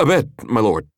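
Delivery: stuttering, stammering. A guard answers his lord's furious demand, stuttering. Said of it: "the man stuttered".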